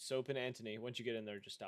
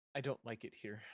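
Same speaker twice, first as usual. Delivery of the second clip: put-on voiced as a little girl. Retelling what a panting figure said, the speaker uses a young girl's voice. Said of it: "in like a young girl's voice".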